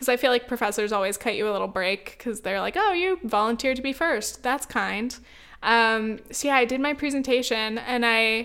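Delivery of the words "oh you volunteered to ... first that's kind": ordinary delivery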